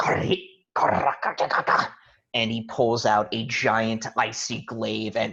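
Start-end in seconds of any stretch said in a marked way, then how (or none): 0.0-1.9 angry, pitched-up character voice. Voicing a foe who stares angrily before charging: angry character voice. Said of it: "stares at you angrily and goes".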